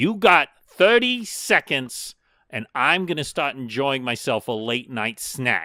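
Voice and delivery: shouting upward, calling out loudly. Voicing a story character who yells up to the listeners: yelling up to someone. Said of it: "He yells up to you and he goes".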